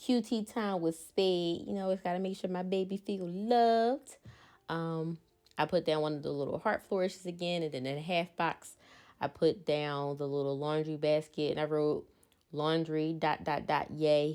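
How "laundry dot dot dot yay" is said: normal talking voice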